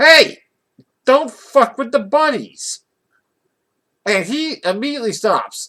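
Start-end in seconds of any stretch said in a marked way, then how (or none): 0.0-2.8 very loud, high-pitched, furious, angry yell. Retelling yelling at a big man from a wheelchair, retelling a yell. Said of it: "and I yell".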